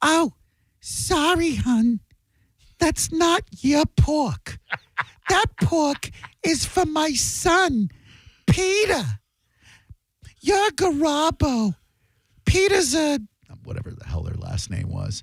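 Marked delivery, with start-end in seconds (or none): 0.0-13.2 piercing, shrill, very high-pitched, very drawn-out delivery. Telling a story about a family meal, the speaker imitates Aunt Susie's shrill voice. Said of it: "my Aunt Susie with that shrill ass voice".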